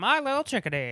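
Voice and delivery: loud, high, big comic character voice. Comparing an actor's voice in a movie: W.C. Fields voice. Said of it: "Like a W C Fields".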